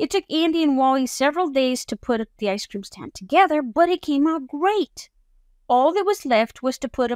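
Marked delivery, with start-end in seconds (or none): none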